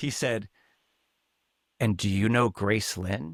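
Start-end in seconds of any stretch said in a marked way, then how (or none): 1.8-3.3 put-on hushed whisper, lower pitch. Retelling what a camp mate asked at art camp: imitating a hushed whisper. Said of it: "almost in a hushed whisper".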